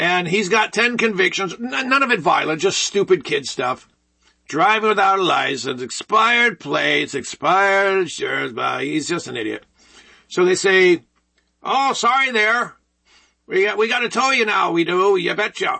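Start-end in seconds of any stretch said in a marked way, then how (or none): 11.6-15.8 put-on Minnesota accent. Retelling what they said before towing him, in a Minnesota accent. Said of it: "That's my Minnesota accent".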